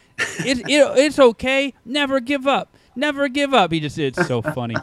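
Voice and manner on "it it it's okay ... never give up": put-on high-pitched little child voice. Imitating a two and a half year old son who lost a game: imitating a toddler son. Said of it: "my impression was nearly as adorable".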